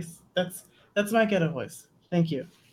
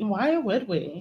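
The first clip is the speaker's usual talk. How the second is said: put-on girlish voice; 3 semitones higher than usual.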